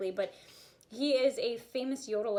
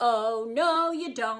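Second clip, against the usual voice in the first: put-on very loud, very slow, drawn-out, cheeky sassy teen voice; 9 dB louder than usual. Teaching a voice exercise, answering the knocking old lady as a sassy teenager. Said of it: "we're going to be a sassy teenager".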